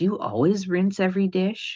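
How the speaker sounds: put-on conspiratorial, friendly whisper. Retelling own childhood question to a sister: imitating a conspiratorial friendly whisper. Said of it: "in a conspiratorial, friendly whisper".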